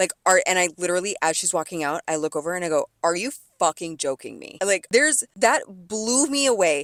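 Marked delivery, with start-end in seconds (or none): 3.0-4.6 sudden, furious, angry blurted outburst. Retelling a remark made as someone walked out with the food: retelling own angry outburst. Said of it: "I was so, so mad".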